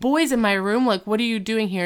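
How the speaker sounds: acted angry girl voice, outburst delivery. Retelling a Boy Meets World scene where a girl bursts in: imitating an angry girl. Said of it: "Angry girl".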